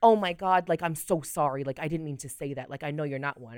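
mock over-the-top dramatic voice. Retelling how someone apologized for misgendering them: imitating an over-the-top apology. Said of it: "She would just catch herself and make a scene".

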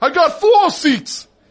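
shrill, piercing, very high scream at full volume. Retelling a guy running out of a record store, imitating him screaming. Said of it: "And he's screaming".

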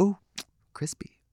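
soft, whispered, nonchalant delivery.

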